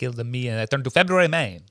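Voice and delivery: mock Russian Yiddish-inflected accent.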